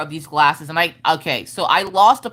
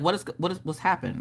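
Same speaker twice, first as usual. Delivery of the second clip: put-on confused tone, quieter; 10 dB quieter than usual. Retelling Mister Coffee's reply to her plea: imitating a confused question. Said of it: "he's just looking at me confused".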